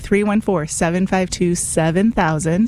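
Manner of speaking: deliberately slow, careful, precise delivery. Host repeating the pledge phone number for listeners, slowly and correctly. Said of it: "I'm going to say it slowly and correctly".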